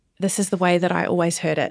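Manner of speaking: normal talking voice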